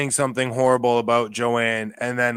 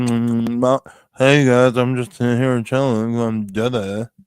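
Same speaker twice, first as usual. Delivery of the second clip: mock lazy mumbling with mouth full. Mocking how another speaker talks: imitating Jessie talking lazily with mouth full. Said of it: "she's got a nipple in her mouth".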